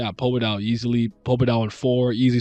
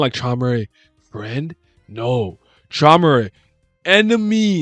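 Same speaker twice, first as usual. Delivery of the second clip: very slow, broken ape-like speech; 4 dB louder than usual. Speaker guessing how Enkidu might talk, in Planet of the Apes ape speech. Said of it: "you sound like the apes from like um the apes from Planet of the Apes".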